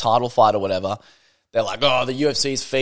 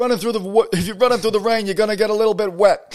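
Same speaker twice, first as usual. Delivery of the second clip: very high, badly done commentator voice; 9 semitones higher than usual. Talking over a boxing fight with another speaker: terrible Teddy Atlas impression. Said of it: "Teddy Atlas impression".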